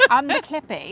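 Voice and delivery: put-on British accent throughout the whole line. A guest introduces herself as the Clippy, in a British accent. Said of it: "if you say it in a British accent".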